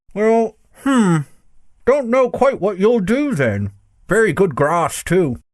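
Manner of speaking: muffled through a full mouth. Narrator reads a character answering two others, speaking with his mouth full. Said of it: "speaking with his mouth full".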